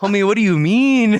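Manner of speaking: local New Mexican way of talking. Joking about local workers: New Mexican accent. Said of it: "the New Mexican is still very alive".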